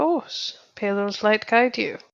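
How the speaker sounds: very quiet, softly spoken voice. Voicing a character answering a man near death, very soft-spoken. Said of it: "very soft spoken".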